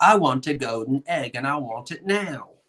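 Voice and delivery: impatient, demanding put-on voice, no patience. Quoting Willy Wonka and the Chocolate Factory: Veruca Salt voice. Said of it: "I'm Veruca Salt".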